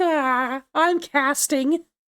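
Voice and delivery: slow, sprawled-out, lazy, laid-back delivery. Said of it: "I feel very just loungy".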